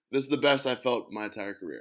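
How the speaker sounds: plain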